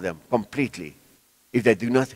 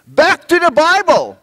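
put-on little boy's loud, high-pitched shouting cry; 10 dB louder than usual. Retelling how a toddler on a shopping trolley shouted to everyone. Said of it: "he shouted to everyone in that Pick n Pay".

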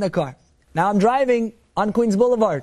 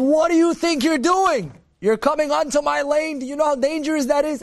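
high-pitched screaming and yelling tirade; 5 semitones higher than usual. Retelling a police officer screaming at him through the car window, retelling a scream. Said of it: "he's screaming".

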